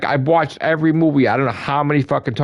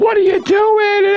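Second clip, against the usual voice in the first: play-acted, very high, shrill screaming grandmother voice; 4 dB louder than usual. Acting out his grandmother screaming at his father, imitating grandmother screaming. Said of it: "she would be screaming at my father".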